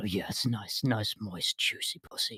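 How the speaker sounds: whispered, hushed, soft, breathy ASMR voice. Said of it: "the soft A S M R whisper voice".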